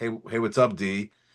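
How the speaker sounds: ordinary delivery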